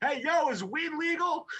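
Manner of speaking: very high, drawn-out shout. Playing a character in a bar, calling to people across the room: shouting down the aisle. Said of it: "I'm gonna shout down the aisle".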